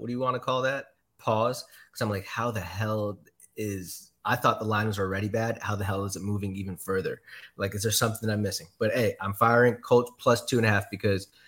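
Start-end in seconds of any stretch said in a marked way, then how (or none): none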